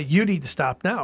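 acted, lifted stern voice. Describing a teacher stopping misbehaving kids in class, retelling a raised voice. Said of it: "he'd raise his voice".

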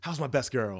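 put-on old-timey 1930s movie style talk. Showing a friend how to talk like the 1930s, old-timey 1930s talk. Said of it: "talk like you're from the fucking 30s".

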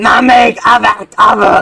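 put-on scream. Recounting a scene and voicing Dylan's scream, Dylan screaming in agony. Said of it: "in his agony, screams out".

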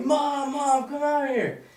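mock screaming. Recounting seeing a UFO and calling to mom, retelling a scream. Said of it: "So I'm screaming".

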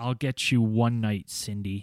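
very low, hushed half-whisper. Retelling what a man said when he phoned a woman: low half-whisper. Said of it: "said in a low whisper".

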